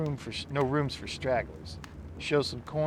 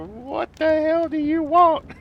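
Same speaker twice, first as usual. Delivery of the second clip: put-on very old man voice, higher and louder; 12 dB louder than usual. Retelling a movie scene, a hundred-year-old man answering the bell: imitating a hundred-year-old man. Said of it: "this, like, hundred-year-old man comes walking out".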